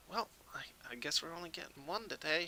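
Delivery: high, soft half-elf voice, sounding nearby. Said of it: "Silva, say".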